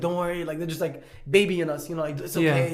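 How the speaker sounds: normal talking voice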